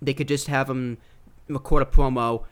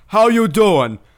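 booming put-on wrestler voice, very loud and high; 7 semitones higher, 9 dB louder than usual. Naming a favorite wrestling act, then imitating Big Cass. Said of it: "is that your Enzo Amore impression".

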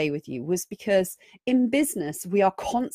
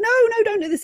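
shrill, very high, fearful little-monster shout; 4 dB louder than usual. Describing the fear monster that wakes when you try something different, imitating it shouting. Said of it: "it's really going to start shouting at you".

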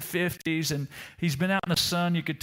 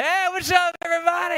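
brash, obnoxious, loud, very high voice; 13 semitones higher, 6 dB louder than usual. Retelling a passenger walking down the plane aisle: imitating a loud obnoxious greeting. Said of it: "he's just kinda loud and a little obnoxious".

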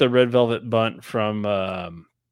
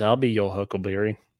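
normal talking voice

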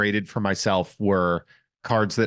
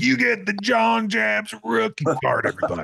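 mock yelling, very high, raspy and rough; 13 semitones higher than usual. Ending a podcast by yelling in a Don West voice. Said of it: "yelling in a Don West voice".

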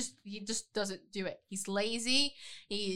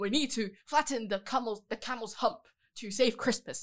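put-on old-fashioned, pompous speech. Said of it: "he speaks like a Charles Dickens character".

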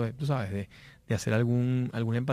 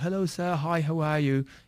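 attempted, put-on British English accent; 4 semitones higher than usual. Retelling arriving in India and greeting people, attempting a British accent. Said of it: "Trato de hacer mi acento británico".

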